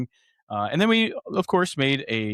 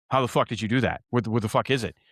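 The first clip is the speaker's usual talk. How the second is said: confused-sounding dog voice; 2 semitones lower than usual. Retelling the dog's reaction to the ball trick: voicing Cadence the dog. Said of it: "she was looking at me like".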